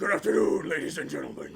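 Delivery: put-on deep voice. Recalling a plan to greet an open mic in face paint, put-on deep voice. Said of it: "along with that deep voice".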